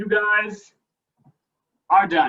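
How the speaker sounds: out of breath. Ending a group workout, speaking to everyone, out of breath. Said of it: "i'm out of breath".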